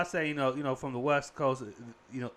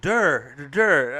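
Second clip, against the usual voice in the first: put-on Baltimore accent, very loud and drawn-out; 10 dB louder than usual. Mocking an accent heard in a show: imitating a Baltimore accent. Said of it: "that Baltimore accent".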